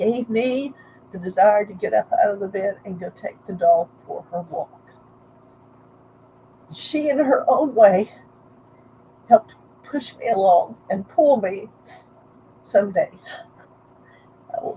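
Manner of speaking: tearful voice, crying while talking. Sharing a personal story about walking the dog, crying while talking. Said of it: "I'm sorry, I'm crying a lot".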